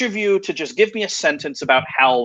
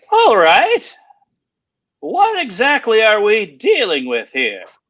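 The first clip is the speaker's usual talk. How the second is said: high-pitched, swooping character voice; 5 semitones higher, 3 dB louder than usual. Narrating a scene, voicing a burly man who looks the group over, Hal's high-pitched voice. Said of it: "he has a very high-pitched voice".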